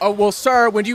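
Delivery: put-on mocking judge voice. Retelling a Judge Judy clip where she mocks an old man: imitating Judge Judy mocking. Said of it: "she starts making fun of him".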